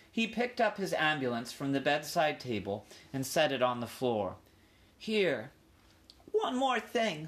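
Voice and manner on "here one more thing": worried, uneasy, anxious, high voice. Ralph asks for one more favor, speaking anxiously. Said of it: "said Ralph anxiously".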